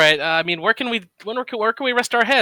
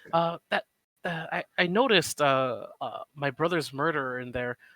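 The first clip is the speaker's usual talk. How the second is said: very soft, hushed, slow, drawn-out half-whisper; 3 semitones lower, 10 dB quieter than usual. Half-whispering in character to Lady Watcher at a table: hushed half-whisper. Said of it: "but I just wanna whisper".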